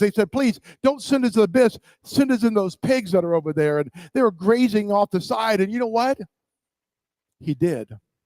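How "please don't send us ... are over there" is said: imploring, pleading, begging voice. Retelling how the demons begged to be sent into the pigs: imitating demons begging. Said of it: "These demons began to beg Jesus".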